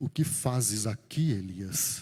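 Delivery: radio announcer delivery. Repeating the line to elias, switching into an announcer voice. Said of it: "Vou colocar uma voz de locutor aqui agora".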